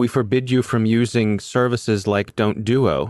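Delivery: ordinary delivery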